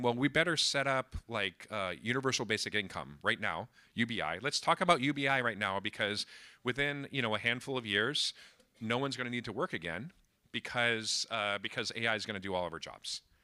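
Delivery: plain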